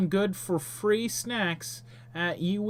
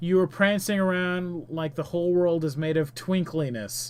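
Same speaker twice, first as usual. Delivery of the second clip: usual speaking voice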